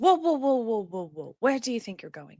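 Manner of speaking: whispered but stern. Stopping someone dashing down the stairs toward you, whispered but stern. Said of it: "I'm going to kind of say in whispered but stern tones".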